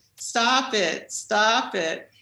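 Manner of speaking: put-on, heavy New Jersey accent, very slow. Retelling a protester screaming from a pew: imitating a thick New Jersey accent. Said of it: "in his thick New York, uh, New Jersey accent".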